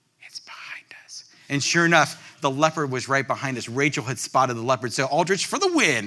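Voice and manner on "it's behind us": very quiet, hushed whisper. Retelling how a wife spotted the leopard behind the truck: imitating Rachel whispering.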